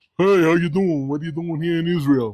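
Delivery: put-on heavy, fast, deep New York accent, rattled along. Retelling what a man said to him in Israel, in a deep New York accent. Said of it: "Deep New York accent".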